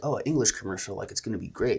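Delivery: ordinary delivery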